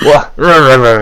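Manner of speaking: loud, startled goblin voice with rah-rahs. Voicing a second goblin stumbling back in surprise: deeper goblin voice. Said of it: "the deeper goblin voice".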